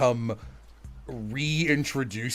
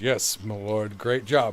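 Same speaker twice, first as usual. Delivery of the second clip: mock-flat, unenthusiastic delivery; 4 semitones lower than usual. Recalling an improv bit, the speaker repeats a partner's reply, mimicking an unenthused delivery. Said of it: "why did you sound so unenthused?".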